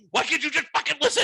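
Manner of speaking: put-on very high, rushed, rattled-off screaming. Retelling being tired and cranky with their dog, screaming at it. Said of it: "I am now screaming at this dog".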